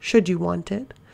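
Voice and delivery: ordinary talk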